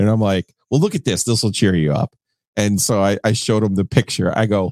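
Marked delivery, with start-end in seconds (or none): none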